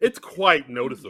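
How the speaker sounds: snippy, catty voice. Quoting a submitted trivia line: catty tone. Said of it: "Sound like a little catty when you say that".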